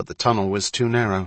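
ordinary delivery, nothing marked

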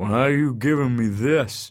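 slow, wary, distrustful, suspicious tone. A wino is handed a dollar bill by a stranger, suspicious. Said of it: "the wino said suspiciously".

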